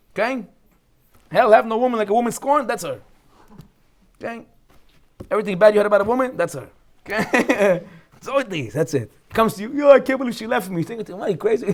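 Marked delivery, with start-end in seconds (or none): 9.7-10.7 high, whiny, blubbering crying voice. Speaker acts out what a dumped guy says, imitating a crying guy. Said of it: "But he's crying".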